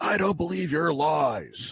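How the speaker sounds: slow, menacing, threatening, furious voice. Game master voicing a father who threatens a player with his fists: threatening angry father. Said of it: "he's threatening you with a meaty fist".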